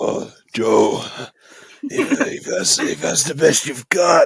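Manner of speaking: very slow, high, creepy, taunting sicko voice. Describing how wrestlers try to sound like a sicko: wrestler's put-on sicko voice. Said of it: "they do that voice".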